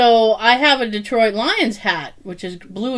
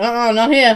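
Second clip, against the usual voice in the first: usual speaking voice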